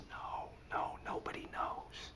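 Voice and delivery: very slow, very quiet, hushed whisper. Showing how a hesitant man whispered so he couldn't be heard: whispered. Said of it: "whispering like this".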